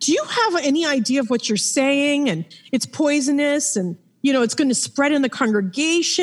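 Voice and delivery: restrained, lecturing mild half-yell. Retelling how the elders came to the house: imitating elders yelling. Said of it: "they're yelling at me like".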